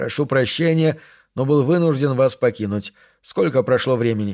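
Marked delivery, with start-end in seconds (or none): none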